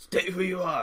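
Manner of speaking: strained grimacing guard voice. A game master voices one of five shadowed figures challenging the group, very grimacing voice. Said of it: "says in a very grimacing voice".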